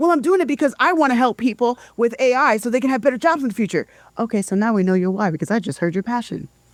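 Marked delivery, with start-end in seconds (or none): 0.0-3.9 bristling, defensive, pitched-up tone. Speaker acting out someone's answer after being challenged on their drive; defensive. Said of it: "now you feel defensive".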